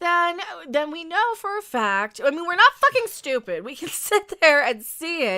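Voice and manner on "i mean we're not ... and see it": raised voice, higher and louder. Arguing that the ship looks different, yelling. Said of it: "I'm yelling at these".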